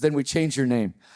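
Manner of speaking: ordinary talk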